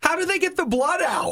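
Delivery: put-on very high, small child's little-kid voice. Retelling a waiting-room moment, the speaker quotes a little kid: little kid's voice. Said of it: "You hear this little kid's voice go".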